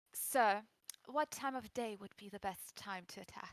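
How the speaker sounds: as noble-sounding as possible. A character addresses someone as sir, in the most noble way possible. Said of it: "say this in like the most noble way possible".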